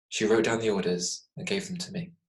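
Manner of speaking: ordinary delivery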